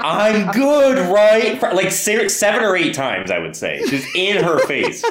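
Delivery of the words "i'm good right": full-on, high-pitched, put-on screaming voice. Recounting a character yelling in a woman's face: imitating someone screaming. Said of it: "He's balls deep in this lady screaming".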